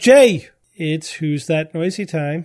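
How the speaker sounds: plain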